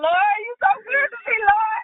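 high-pitched, tearful, play-acted weeping. Retelling a past moment of prayer: imitating own past crying. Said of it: "I'm over here crying like".

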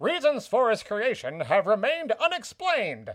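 put-on mid-Atlantic accent. Reading out a quoted passage from a writer, in a mid-atlantic accent. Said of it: "i should like a mid-atlantic accent for this".

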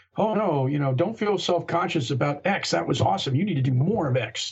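ordinary talk, nothing marked

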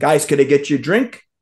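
ordinary talk, nothing marked

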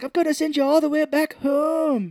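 very high put-on Irish accent, "home" drawn out. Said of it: "does an Irish accent to him".

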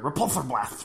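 nerdy, geeky, dorky voice. Showing how the hero should have sounded: nerdy voice. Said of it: "He should have sounded like a nerd".

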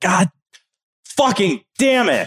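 high, fed-up, exasperated outburst. Retelling being annoyed during the game: imitating an exasperated player. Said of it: "and you're like".

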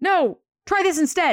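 urgent high-pitched screaming. Retelling how Jane's friend screams at her as she swings down to help. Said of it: "she literally screams".

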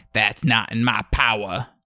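put-on Okie accent. Recapping a show, the speaker imitates a woman character, Okie smoky accent. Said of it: "she's also got this like kind of like okie smoky accent".

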